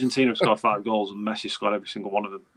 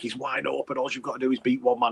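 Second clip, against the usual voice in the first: put-on screaming, urging tone; 3 semitones higher than usual. Retelling what fans shout at the telly: imitating screaming at the TV. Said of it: "we're all screaming at the telly like".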